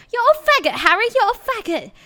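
put-on British accent, very high pitch. Speaker retells how a friend used to joke, in a Harry Potter-style British accent. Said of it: "With like British accent".

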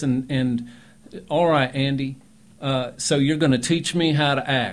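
put-on booming, very loud Alabama accent with hard R's. Recalling a former student from Alabama, imitating how she talked. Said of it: "she'd talk like this".

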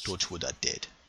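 very quiet, barely audible, hushed. Voicing a character who reacts to news, speaking very quietly. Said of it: "just very quietly".

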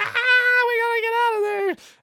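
put-on very high frantic shriek, "gotta" stretched. Retelling a scene where the daughter runs off, imitating a scream. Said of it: "She's like screaming".

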